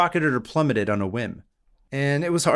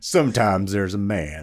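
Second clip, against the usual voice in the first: put-on cowboy voice; 4 semitones lower than usual. Quoting a film the listener has never seen, in a Big Lebowski cowboy voice. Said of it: "It's like a cowboy voice".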